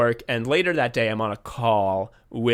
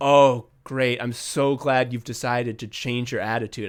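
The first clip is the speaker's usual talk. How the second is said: put-on relieved sighing tone. Retelling the boss's reply after a big sigh: imitating boss's relieved sigh. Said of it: "breathes this big sigh of relief and is like".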